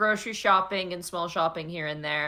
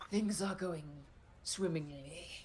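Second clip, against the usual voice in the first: very quiet, hushed, sinister, diabolical villain voice; 12 dB quieter than usual. The parrot replies when greeted as buddy, in an evil, diabolical voice. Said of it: "You hear in a v- evil, diabolical voice".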